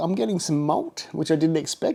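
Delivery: upward inflection. Tasting a beer and noticing unexpected malt: voice rising like Australians talk. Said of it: "That's why my voice went up, like Australians talk".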